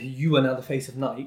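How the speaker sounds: ordinary talk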